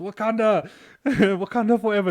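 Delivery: shrill, high, loud shout. Telling how someone wound down the car window at a stranger: retelling a shout. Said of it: "Connor winds down his window and shouts".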